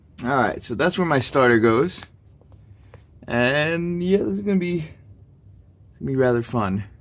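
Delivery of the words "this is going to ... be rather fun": heavy sarcasm with swooping sing-song tune. Talking about the starter repair about to begin: sarcastic. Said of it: "there's a lot of sarcasm in my voice".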